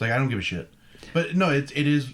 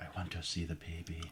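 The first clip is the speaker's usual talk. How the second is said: put-on German accent, lower and quieter; 7 semitones lower, 17 dB quieter than usual. Doing an impression offered to the others: Werner Herzog impression. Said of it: "I could do Werner".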